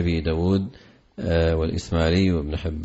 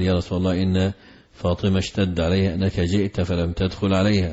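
ordinary talk, nothing marked

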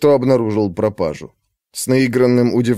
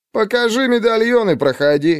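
unconcerned, dismissive, indifferent, slightly higher-pitched tone; 8 semitones higher than usual. The right guard answers Lesha's urgent plea, an indifferent retort. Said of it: "равнодушно парировал правый стражник".

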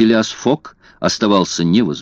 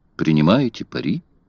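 plain reading voice

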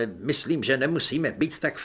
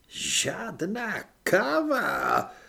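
high groan, káva drawn out; 6 semitones higher than usual. A narrator reads Maledikt replying after being given orders, groaning. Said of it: "zasténal Maledikt".

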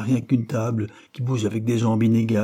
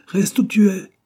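very high, shrill, commanding, imperious shout; 10 semitones higher, 6 dB louder than usual. Narrator reads a woman's order while she scrubs bricks, shouting imperiously. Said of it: "cria-t-elle impérieusement".

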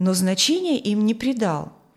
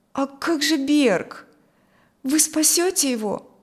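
shaky, high, trembling, begging voice; 5 semitones higher than usual. He begs the doctor about the wounded man, in a trembling, pleading voice. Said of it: "дрожащим голосом взмолился Коля".

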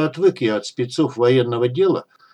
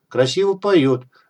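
ordinary delivery

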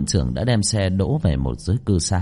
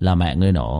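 usual speaking voice

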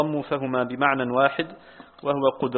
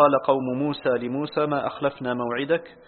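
plain

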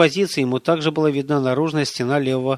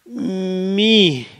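wheezing, rasping croak, much higher pitch; 6 semitones higher than usual. Oleg, being choked by a psi attack, forces out a single word, wheezing. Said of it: "прохрипел он".

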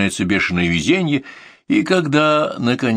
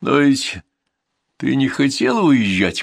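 drowsy, sleepy voice on the edge of sleep; 5 semitones higher than usual. Narrator in bed, about to drift off to sleep, asks a question in a sleepy voice. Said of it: "спрашиваю сонным голосом".

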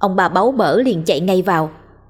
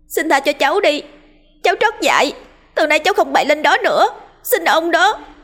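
very high, screamed, pleading shriek; 9 semitones higher than usual. The boy Nhất suddenly cries out, screaming. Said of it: "tiếng thằng Nhất hét lên".

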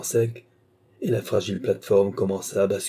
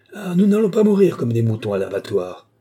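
forceful, loud, swooping shout; 3 semitones higher, 6 dB louder than usual. Trapped in a lift, a man throws his weight against the wooden wall, shouting.

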